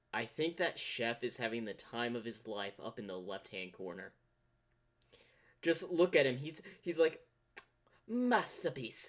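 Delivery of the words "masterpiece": clumsy put-on Italian accent, pitched up. Speaker voices the chef up in the left-hand corner, bad italian accent. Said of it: "that's my form of an Italian accent".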